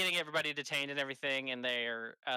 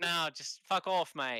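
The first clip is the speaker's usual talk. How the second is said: put-on Australian accent, higher; 4 semitones higher than usual. Speaker voicing a character in a role-play scene, Australian accent. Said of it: "Is it Australian?".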